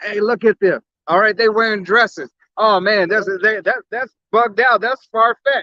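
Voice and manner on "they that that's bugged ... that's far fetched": normal talking voice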